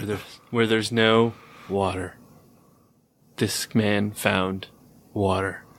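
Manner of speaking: low movie trailer announcer voice. Imitating the movie trailer guy for another speaker: movie trailer guy voice. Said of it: "the movie trailer guy?".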